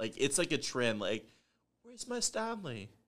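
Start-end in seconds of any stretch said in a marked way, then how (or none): 1.8-2.9 very high-pitched put-on British accent. Joking about a trend among young women, the speaker puts on a British accent. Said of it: "that's my British accent".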